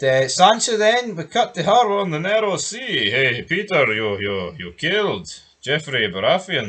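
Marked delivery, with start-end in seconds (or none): 3.1-6.7 put-on Eastern European accent. Recapping a show scene, voicing a line to Peter, in an Eastern European voice. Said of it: "Don't know why I've got an Eastern European voice".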